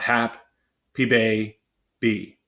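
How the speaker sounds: put-on happy baby chopped into wrong syllables, split by pauses. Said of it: "how do we know that it's happy and baby and not".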